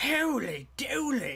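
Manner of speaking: poor put-on voice. Just before welcoming viewers back to the game, exclaiming in a bad impression. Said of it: "So that was a bad impression".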